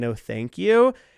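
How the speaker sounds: imitated crying. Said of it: "me crying in my car and me saying".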